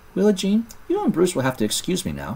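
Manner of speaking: very high, courteous, well-mannered sing-song voice. Ramona excuses herself to willa jean, in her polite voice. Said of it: "Ramona said in her polite voice".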